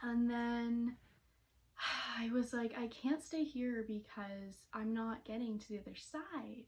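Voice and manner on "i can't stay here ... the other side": ordinary talk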